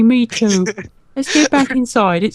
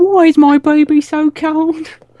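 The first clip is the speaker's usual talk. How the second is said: very slow, drawn-out, high put-on Cockney accent; 6 semitones higher, 3 dB louder than usual. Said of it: "like him and her are both Cockney people".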